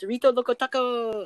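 playful, silly, high voice. Showing the others how the line was said before: repeating own funny little way. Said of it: "said it in, like, a funny little way".

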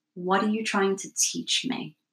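plain

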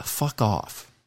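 hushed, soft, breathy whisper under the breath. Saying a suggested reply quietly in case she's not asleep: whispering. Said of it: "and I'll whisper in case she's not".

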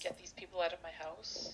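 unvoiced hushed whisper.

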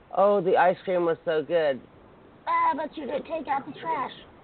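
put-on Filipino-accented female voice. Showing how a Filipina partner can snap: imitating a Filipina woman. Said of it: "Was that your voice?".

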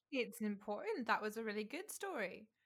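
sarcastic, ironic delivery. Reacting to a long story about the postman, sarcastic. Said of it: "That's so sarcastic".

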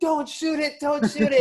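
play-acted, shrill, very high yelled voice. Retelling a shout during a Lakers game on TV: imitating Dave yelling. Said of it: "vividly remember Dave yelling".

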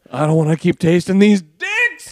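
put-on shout. Retelling a stand-up punchline, imitating a yell on dicks. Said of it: "he yells dicks".

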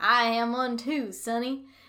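bad Texan accent, loud and slow. Retelling the ranch hand's reply in a story: bad put-on texan accent. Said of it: "I don't think that's how Texans sound at all".

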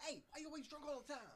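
shrill, very high and very loud voice. Speaker showing how a character's little friend sounds, impression of his little friend. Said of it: "Doesn't he sound like this?".

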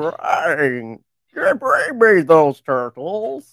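booming, very slow voice, swooping high. Answering a request for a Krang impression from the other speaker. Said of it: "Can I get a Krang impression".

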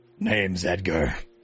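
grunting minotaur voice. Narrating a story, a very large minotaur at the helm introduces himself: Edgar the minotaur, grunting. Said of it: "he grunts like".

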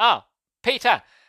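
startled call, high and loud.

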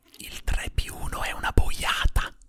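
unvoiced mock secretive whisper.

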